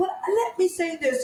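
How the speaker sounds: fake British accent, pitched a bit high. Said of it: "in her, in her, uh, Engli-, English".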